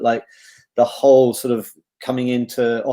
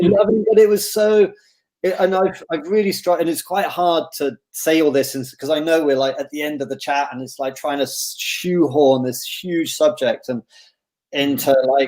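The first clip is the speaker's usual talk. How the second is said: ordinary delivery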